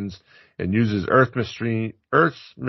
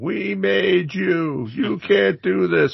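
imitated scream, higher; 9 semitones higher than usual. Retelling a scene with the waitress: imitating a waitress screaming. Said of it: "the waitress screaming".

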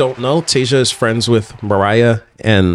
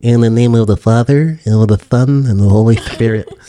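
put-on lisp, slower; 3 dB louder than usual. Recalling how the priest says mass, the speaker imitates his lisp. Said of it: "He had a lisp".

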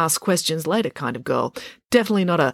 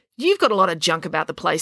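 ordinary delivery, nothing marked

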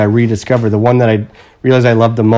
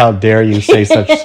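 usual speaking voice

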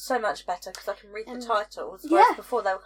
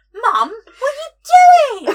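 put-on acted young child voice; 14 dB louder than usual. Retelling the child's reaction to voice notes, imitating a small child. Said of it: "he's like".

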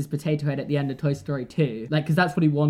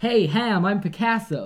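terrible put-on American accent, pitched high; 5 semitones higher than usual. Retelling a film scene, speaker voices a character in a terrible American accent. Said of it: "Sorry for the terrible American accent".

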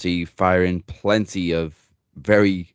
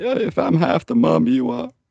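mock crocodile-tears voice, very high, drawn-out fake sob; 10 semitones higher than usual. Retelling a wrestler's speech to Becky, imitating Nia Jax's crocodile tears. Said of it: "it was all crocodile tears".

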